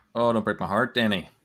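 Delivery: pleading, put-on Irish accent. Discussing player picks with a co-speaker, pleading about Danny, in an Irish accent. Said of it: "Was that an Irish accent?".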